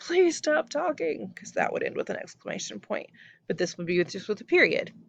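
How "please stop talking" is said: shouting, pitched very high. Showing students how a polite request turns into a command: yelling. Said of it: "the point where I'm yelling".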